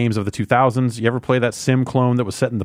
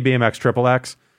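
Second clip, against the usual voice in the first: usual speaking voice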